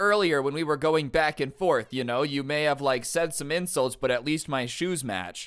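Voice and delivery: ordinary talk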